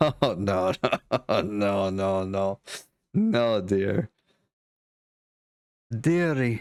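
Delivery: very slow speech through a light laugh. Voicing a character who answers a player, laughing a little while speaking. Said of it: "she sorta laughs a little bit".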